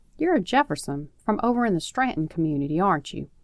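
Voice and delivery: plain reading voice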